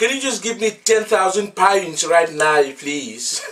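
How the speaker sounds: attempted Irish accent. Speaker in the uk tries out an impression in an irish accent. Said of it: "I can try to do like an Irish accent".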